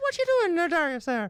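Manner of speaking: very high-pitched put-on woman's voice. Retelling what a friend's mother said on walking in: imitating the friend's mum. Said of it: "do the voice".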